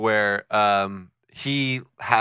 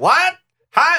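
put-on very high, very loud old woman calling out; 8 dB louder than usual. Imitating someone talking over a running chainsaw: imitating an old grandma voice. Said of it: "like, an old, like, w-, like, woman".

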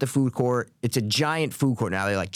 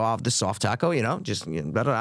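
usual speaking voice

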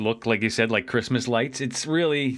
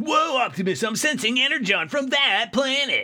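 put-on high eager child voice. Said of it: "then he goes".

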